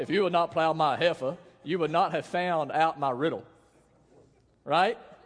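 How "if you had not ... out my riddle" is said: mock Southern US accent. Reading a Bible verse as Samson: imitating Samson in a southern accent. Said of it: "I really think it's like a southern accent".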